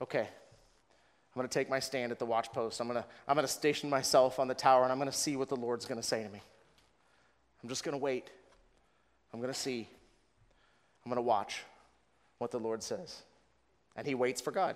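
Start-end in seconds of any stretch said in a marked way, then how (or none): 0.0-13.2 mock-somber, quieter and faster. Voicing Habakkuk's words about waiting for God, acting out a somber tone. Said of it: "It's just a somber, sober".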